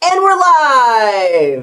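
drawn-out game show host announcer voice. Giving your best attempt at a game show host impersonation. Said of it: "my best attempt at a game show host impersonation".

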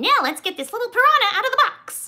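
put-on high-pitched, loud little-kid voice. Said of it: "when Caden said".

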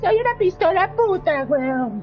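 put-on, mock girl's voice. Gamer voicing the in-game pistol as it talks, in a put-on girly voice. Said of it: "hace la voz así de jeva toda puta".

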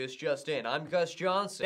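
newscaster reading delivery. Joking that a name sounds like a news anchor's: newscaster voice. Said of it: "sounds like a newscaster".

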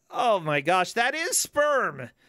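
yelling out loud. Streamer reacts to an icon in a game: yelling out loud. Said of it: "I just yelled that out loud in my house".

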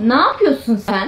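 high, suspicious woman's voice.

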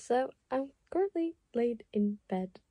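quiet, machine-like robotic voice. Telling her team she's currently in bed, talking like a robot. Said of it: "I don't know why I'm talking like a robot".

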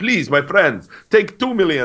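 very high-pitched cartoon count character voice. Voicing a rich Emirati offering esports money, in a Count from Sesame Street voice. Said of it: "like the count from Sesame Street".

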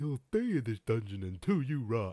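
very loud, high-pitched, dim-witted brute voice. Narrating a dungeon adventure, redoing a character's threat in a dumb-guy character voice. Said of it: "he sounds like he would talk more like".

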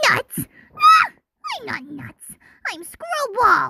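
bouncy, sing-song, weird-sounding voice. Getting into a character voice and introducing the character Screwball, Screwball cartoon voice. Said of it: "let's get into the scribble voice".

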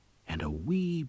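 ordinary delivery, nothing marked

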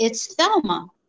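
imitated little girl voice. Retelling a recording of a little girl heard on an investigation: imitating a little girl's voice. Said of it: "in a little girl's voice".

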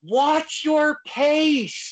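mock yelling. Retelling yelling at a wrestler during a match: imitating own past yell. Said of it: "I start yelling".

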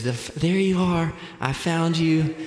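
mock crying, high, tearful voice. Retelling how mom found the lost child: imitating mom crying. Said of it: "and she's crying".

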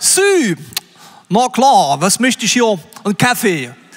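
loud, bad put-on Saxon accent. Retelling ordering coffee at a gas station on tour, attempting a Saxon accent. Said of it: "probiert, sächsisch zu reden".

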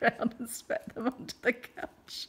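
words said with laughter breaking in. Telling a funny story, speaking while laughing. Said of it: "I'm just laughing because it's funny".

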